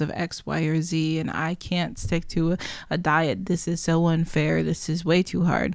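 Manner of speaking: ordinary delivery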